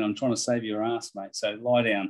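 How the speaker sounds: usual speaking voice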